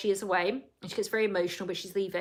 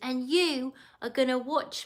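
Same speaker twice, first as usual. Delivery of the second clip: put-on, high, babyish voice; 5 semitones higher than usual. Quoting what she said to someone, spoken in a baby voice. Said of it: "she speaks in a baby voice and she goes".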